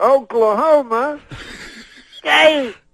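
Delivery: slow, high, drawn-out crowd-hyping announcer call. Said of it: "he says it slower".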